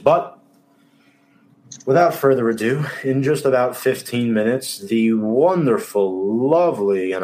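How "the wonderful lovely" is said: most sarcastic tone, slow and drawn-out. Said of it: "I say that with the most sarcastic tone possible".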